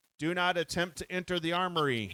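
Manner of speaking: shouted, alarm-style computer voice. Reading out a game card where the computer warns players: computer shouting. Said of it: "and the computer shouts".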